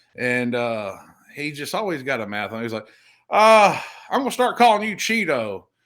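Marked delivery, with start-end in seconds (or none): 4.1-5.6 put-on real down-home country accent, pitched up. Retelling how he got nicknamed cheeto, quoting the guy in a real country accent. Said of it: "he talks, you know, real country".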